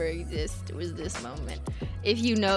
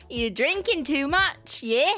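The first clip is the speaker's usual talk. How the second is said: put-on drunken Australian accent; 7 semitones higher, 4 dB louder than usual. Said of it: "That accent is like an Australian is drunk".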